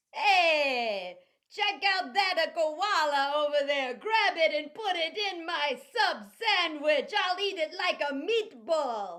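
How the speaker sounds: put-on Italian accent, hey drawn out. Playing an accent improv game set in Australia: Italian accent. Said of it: "Sue gave us Italian".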